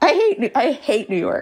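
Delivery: slow, breaking voice. Distracted by a siren while running out of time, voice cracking. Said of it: "Do you hear my voice crack like an eleven year old boy".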